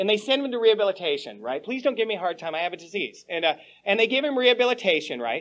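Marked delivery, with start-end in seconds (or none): 1.6-3.3 soft, put-on, begging, pleading voice. Speaker retells a man pleading when sent to rehabilitation, imitating someone pleading. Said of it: "he pleads".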